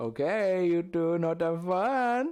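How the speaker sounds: very high, failed, bad Greek accent. Quoting an old Greek woman from a movie, in a bad Greek accent. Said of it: "That's like not a Greek accent".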